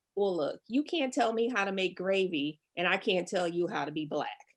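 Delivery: plain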